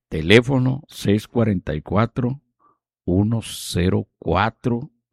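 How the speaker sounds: low, very slow, drawn-out delivery.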